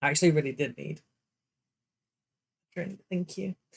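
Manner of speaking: dry, parched voice cracking and breaking up. Thanking viewers for a reminder to drink water: dry voice that keeps cracking. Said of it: "You can hear how dry my voice is, it keeps cracking".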